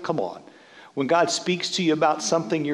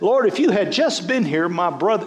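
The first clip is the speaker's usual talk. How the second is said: put-on fed-up, frustrated, reproachful tone; 3 semitones higher, 5 dB louder than usual. Reading Martha's words to Jesus in verse twenty-one: Martha's frustrated tone. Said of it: "she's got this tone in her voice".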